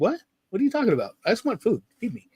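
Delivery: high-pitched, fast dog voice. Voicing what the pet dogs seem to say: voicing the dogs. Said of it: "my dogs look at me like".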